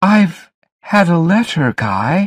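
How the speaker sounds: trembling, quavering voice. Narrator reads a woman's line as she phones a man, shaking voice. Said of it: "Her voice was shaking".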